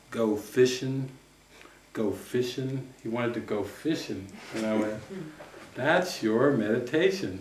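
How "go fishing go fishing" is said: slow, stretched-out southern Mississippi drawl. Retelling a man in his 70s answering what he'd do with his life, slow southern Mississippi drawl. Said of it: "he just said in his slow southern Mississippi drawl".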